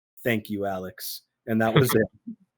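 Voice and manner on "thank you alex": low, flat monotone with no lift at all. Retelling how Seth answered a birthday call, imitating Seth's flat monotone. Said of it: "in the most monotone voice".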